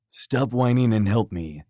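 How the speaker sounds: plain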